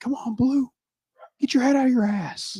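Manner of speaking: put-on, shrill, very high yelling. Retelling how dad reacts to a called strike: imitating dad yelling at umpire. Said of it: "all the time, just, like, yelling".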